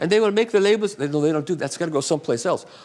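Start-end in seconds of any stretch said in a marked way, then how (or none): 0.0-1.0 put-on German accent, pitched higher. Retelling his conversation with a man about a company, in a german accent. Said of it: "I'll do my German accent".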